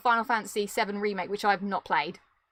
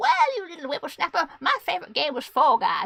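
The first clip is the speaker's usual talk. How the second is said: put-on old lady voice, high pitched, scolding tone; 5 semitones higher, 3 dB louder than usual. Imagining being asked about their game of the year in the future: old lady voice. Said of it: "say I'm an old spinster".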